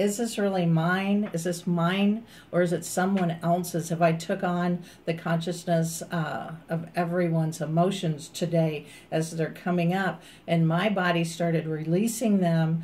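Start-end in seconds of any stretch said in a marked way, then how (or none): none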